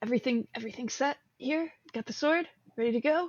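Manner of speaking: quiet, hushed, breath-only stage half-whisper. Half-whispering in character to check in with an ally. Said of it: "I'll just kind of whisper".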